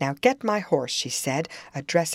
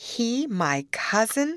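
scoffing, scornful voice through a laugh; 8 semitones higher than usual. Cathy hears Hareton called her cousin: scornful laugh. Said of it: "with a scornful laugh".

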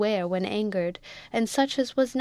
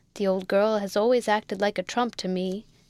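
ordinary delivery

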